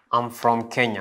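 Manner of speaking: ordinary delivery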